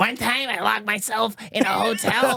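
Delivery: put-on voice of a seven-year-old child. Retelling a hotel story as Steve-O as a seven-year-old. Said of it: "I can do it as Steve-O, as a seven-year-old".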